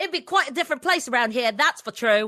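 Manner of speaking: put-on British accent. Repeating a remembered line when asked: put-on British accent. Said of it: "say your British line".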